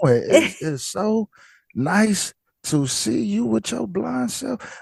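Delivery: exaggerated country accent. Showing a sound to avoid when greeting someone: put-on country voice. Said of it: "if you're country, you're country".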